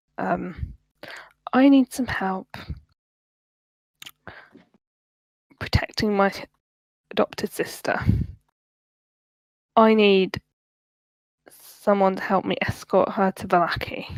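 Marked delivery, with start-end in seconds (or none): 1.5-14.1 speaking in a very low tone. Narrator voicing a man who sits down at the table: very low tone. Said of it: "starts talking in a very low tone".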